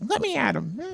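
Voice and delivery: very high-pitched cartoon-puppy voice. Showing how Scrappy Doo used to talk: Scrappy Doo voice. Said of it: "that's how Scrappy Doo used to talk".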